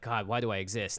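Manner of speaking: usual speaking voice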